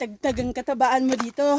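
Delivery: teasing, laughing with loud, breathy bursts.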